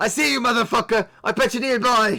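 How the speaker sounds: yelling in a put-on character voice. Voicing a character who stands and yells at a nearby window: character yelling at a window. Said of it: "he yells at the window nearby".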